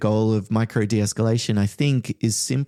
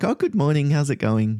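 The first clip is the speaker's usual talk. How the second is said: a little surprised, pleased tone; 4 semitones higher than usual. Greeting someone who answers the phone, sounding a bit surprised. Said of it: "act a little bit surprised ... a tone of voice that's something like".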